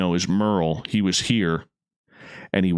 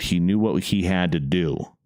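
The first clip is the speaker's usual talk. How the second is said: plain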